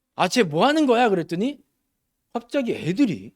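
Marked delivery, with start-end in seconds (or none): 0.2-1.1 mock mildly heated, agitated, slightly raised outburst. Reenacting what he said back then, in a mock-agitated, slightly raised voice. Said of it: "약간 격앙된 목소리로".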